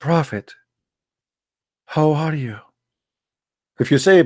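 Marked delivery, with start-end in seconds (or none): 0.0-2.6 lowered, soft, subdued voice, slower pace. Demonstrating how one must speak to the messenger: lowered, subdued voice. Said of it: "You have to lower your voice".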